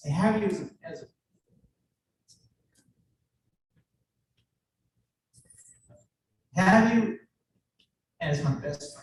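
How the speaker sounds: choked up, stumbling over words. Wrapping up a speech about having a best friend, choking up. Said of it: "I'm choking up".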